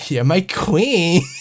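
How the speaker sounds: exaggerated, laid-on-thick camp flamboyant voice. Suggesting a new line reading, saying it in a camp flamboyant Jon Snow voice. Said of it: "make Jon Snow sound like a camp homosexual".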